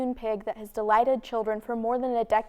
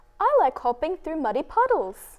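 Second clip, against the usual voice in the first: youthful, high-pitched, swooping, sing-song British voice; 5 semitones higher than usual. Asked to say something about muddy puddles: youthful British Peppa Pig voice. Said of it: "Say something about muddy puddles".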